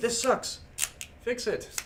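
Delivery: high-pitched, mild, nagging mock squeal. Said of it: "screaming in my ear saying".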